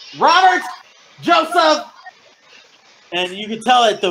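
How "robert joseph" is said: shrill, very high, loud calling out. Voicing a woman in robes calling for two people: yelling names. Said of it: "the way that she was yelling".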